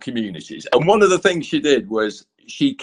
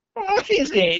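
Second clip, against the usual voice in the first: mock puzzled, confused, very high-pitched voice. Retelling a meeting with the Queen at a painting: imitating the Queen's confused voice. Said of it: "she said in this really confused voice".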